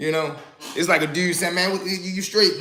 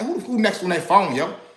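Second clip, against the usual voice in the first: play-acted rude, blunt, disrespectful voice, zero courtesy; 4 semitones higher than usual. Acting out a stranger asking rudely about the phone: imitating someone asking rudely. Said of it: "you definitely not asking me like that".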